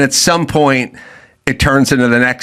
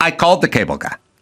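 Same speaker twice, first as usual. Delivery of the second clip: play-acted defiant retort, standing firm; 2 semitones higher than usual. Retelling a reply about calling the cable guy: imitating a defiant reply.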